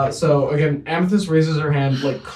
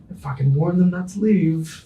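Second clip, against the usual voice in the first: hushed, muttered under the breath, half to herself; 3 semitones higher than usual. Voicing a character sipping a mimosa: muttered under her breath. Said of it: "under her breath says".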